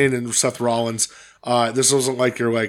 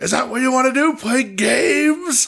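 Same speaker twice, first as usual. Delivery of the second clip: put-on angry tantrum voice, higher pitch; 14 semitones higher than usual. Retelling how Adam Pearce got in the ring: imitating Adam Pearce's hissy fit. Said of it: "he threw a hissy fit".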